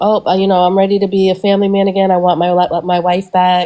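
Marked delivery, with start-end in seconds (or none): none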